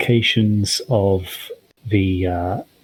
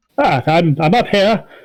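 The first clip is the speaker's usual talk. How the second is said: higher, casual, less grandiose calling-out voice; 8 semitones higher, 4 dB louder than usual. The narrator voices someone calling the players from upstairs, calling out. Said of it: "a slightly less grandiose voice call you from upstairs".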